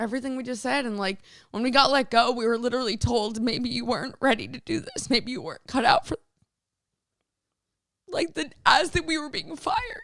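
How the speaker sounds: crying while talking. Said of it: "You're crying".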